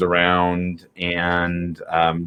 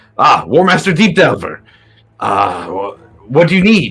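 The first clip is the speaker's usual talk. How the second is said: higher-pitched, called-out voice, stumbling and stammering; 5 semitones higher than usual. Voicing a dwarf guard greeting the war master: dwarf guard yelling out. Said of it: "one of the dwarves yells out".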